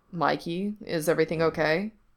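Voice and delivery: ordinary talk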